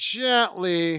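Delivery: "gently" stressed, drawn out slowly and softly. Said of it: "Emphasis on gently".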